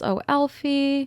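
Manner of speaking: put-on high, tearful, sobbing lament. Retelling a scene where a character weeps over a smoking hat: imitating someone crying. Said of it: "she cries".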